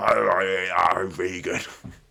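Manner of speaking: posh voice talking through a mouthful of food. Mimicking how royals talk, faking a mouth full of food. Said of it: "like, mouth full of food".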